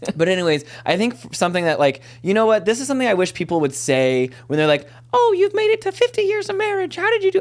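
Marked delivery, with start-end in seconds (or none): 5.1-7.4 odd, silly, very high-pitched put-on character voice. Speaker voicing what people ask a couple married fifty years: put-on character voice. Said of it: "I don't know why I went to that voice".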